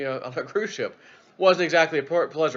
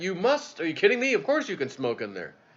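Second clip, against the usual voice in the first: put-on Italian-accented speech; 4 semitones higher than usual. Retelling the captain's words in a voice message, in an italian accent. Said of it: "That was the Italian way of saying it".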